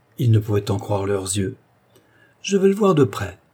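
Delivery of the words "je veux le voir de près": very high, cried-out exclamation. A young lady looking over a garden wall exclaims. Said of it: "s'écria la jeune dame".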